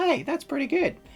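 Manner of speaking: high, pleased exclamation.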